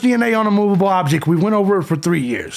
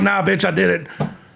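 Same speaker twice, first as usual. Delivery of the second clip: put-on, blunt, plain-spoken voice. Mocking conspiracy claims, imitating Brian Kohberger: imitating Brian Kohberger. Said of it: "Brian Kohberger's like".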